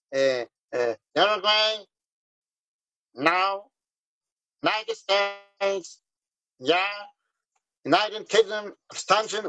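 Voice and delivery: put-on nasal announcer voice. Recalling the vote on the radio, mimicking the announcer: nasal radio announcer voice. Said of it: "avec sa voix nasillarde comme ça".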